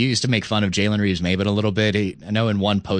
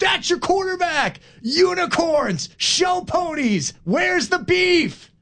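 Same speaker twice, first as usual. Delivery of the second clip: play-acted, very high, stretched-out, drawn-out shriek. Retelling a last-second touchdown call: imitating Scott Zolak screaming. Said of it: "and he just screams".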